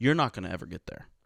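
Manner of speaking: ordinary talk, nothing marked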